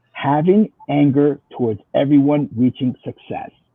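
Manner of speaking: slow, deliberate delivery, each word drawn out carefully. Repeating a definition a second time for listeners, saying it slowly. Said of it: "I'll say it slow".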